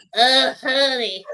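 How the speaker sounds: put-on smug woman's voice. Imitating a woman on stage putting people in their place: imitating a smug woman. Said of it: "she's so smug".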